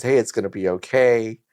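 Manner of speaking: plain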